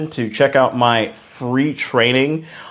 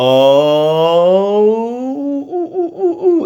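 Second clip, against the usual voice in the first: very slow, high oohs, lips narrowing stepwise; 9 semitones higher, 3 dB louder than usual. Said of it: "the lips got more and more narrow".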